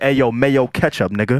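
mock Spanish accent dropping away into American. Retelling what people in Puerto Rico said to him; imitating Spanish accent dropping away. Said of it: "Like the Spanish accent left".

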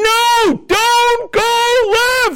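very high, very slow, long drawn-out shout. Describing rewinding a game to watch it again, imitating yelling at the tv. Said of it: "And you're yelling".

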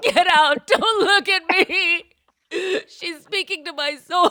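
acted, very high, loud, tearful crying voice. Retelling telling husband to leave the room during a ride: imitating own crying. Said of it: "and I'm crying, and I'm like".

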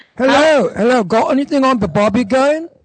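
affected, put-on Australian accent. Joining the Jimmy Star Show bit, in a put-on Australian accent. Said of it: "I did an Australian accent".

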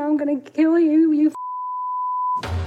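screaming, drawn out with pitch rising. Recounting a man who screamed threats as the speaker ran, retelling a man's screaming. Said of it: "And he was screaming".

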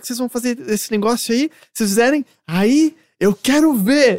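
high-pitched, shouting, yelling voice. Retelling what their father yelled at the kids; retelling a father's yelling. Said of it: "ele tá gritando".

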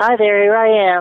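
very high, bright puppet voice. Explaining that Big Bird's voice is his own voice, he demonstrates: Big Bird voice. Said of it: "Big Bird's voice is my voice. I just go higher".

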